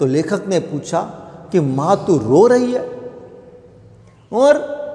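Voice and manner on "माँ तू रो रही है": normal talking voice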